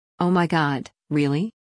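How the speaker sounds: ordinary talk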